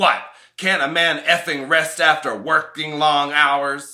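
very loud, put-on tough-guy macho act. Retelling the reply to a dad's question, in the most macho voice possible. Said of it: "in the most macho voice I could muster".

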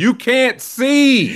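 mock shrill, loud, very high shouting. Retelling a parent shouting from the sideline: imitating mom shouting. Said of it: "my mom just shouting".

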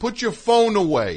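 very high, loud, shrill, drawn-out yell. Retelling a magician telling an audience member off: imitating a yell. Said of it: "he's yelling at some guy".

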